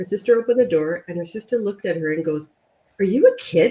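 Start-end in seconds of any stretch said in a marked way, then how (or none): 3.0-3.7 play-acted, very angry, furious, accusing tone. Retelling a woman's sister opening the door to her: mock-angry retelling. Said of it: "Like very angrily".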